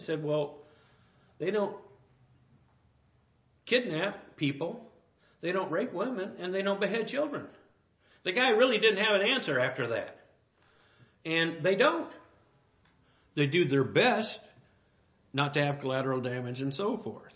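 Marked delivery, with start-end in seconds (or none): 0.2-7.5 bone-dry, deadpan delivery. Retelling a man's answer to a question about Israel: imitating a deadpan reply.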